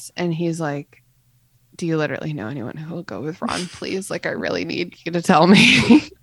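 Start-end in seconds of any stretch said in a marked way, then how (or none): 1.7-6.0 voice brought down, said on the side. Recapping a Half-Blood Prince scene, acting out Harry's line in a lowered voice. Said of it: "Harry lowers his voice".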